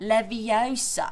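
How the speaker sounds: Leviosa said slowly with stress on a long O.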